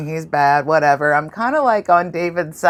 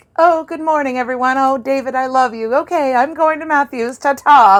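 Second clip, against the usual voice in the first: light, airy, carefree, pitched-up breezy voice; 9 semitones higher than usual. Retelling a character's morning farewell, imitating a breezy cheerful greeting. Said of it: "she was very breezy".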